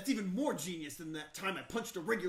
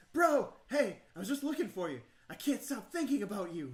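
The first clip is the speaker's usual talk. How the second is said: eager, excited, winded, out-of-breath panting; 4 semitones higher, 4 dB louder than usual. Reading the game scene where Scott catches up with you: Scott panting excitedly. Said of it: "Will their shipping skills be enough to charm [name] the eldritch former god/ current fangirl, win over [name], the werewolf best boy, score an alliance with Vera, the gorgon business mogul, and help".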